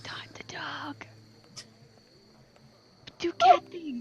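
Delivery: quiet, slow whispering. Whispering to a cat held up at a window: whispering to the cat. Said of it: "I'm gonna whisper to her and be like".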